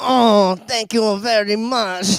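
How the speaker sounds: put-on French accent. Recounting doing an accent while wasted yesterday, the speaker repeats it: French accent. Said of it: "it was French".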